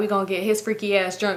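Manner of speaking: ordinary delivery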